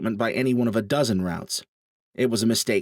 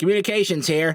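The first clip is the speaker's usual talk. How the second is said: nasal, crackly intercom-like voice, higher pitch; 7 semitones higher than usual. Reading a story aloud, a character answering an intercom: nasally voice. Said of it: "a nasally male voice crackled out".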